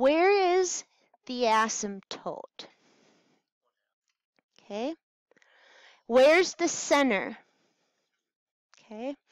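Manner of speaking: super slow, deliberately drawn-out delivery with pauses. Working through a convergence problem, pausing and talking super slow. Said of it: "I'm going to pause and talk super slow".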